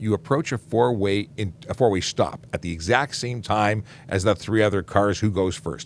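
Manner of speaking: ordinary talk, nothing marked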